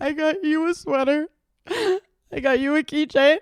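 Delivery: high, loud, tearful sobbing voice, drawn out. Retelling walking around on Christmas after losing the gifts: imitating own past crying. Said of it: "on Christmas crying, going".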